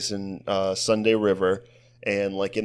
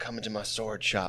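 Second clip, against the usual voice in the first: wicked, dead intense sales-pitch delivery; 8 dB quieter than usual. Retelling a comedy skit about selling swords: imitating Will Forte, wicked intense. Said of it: "it's him just, like, wicked intense".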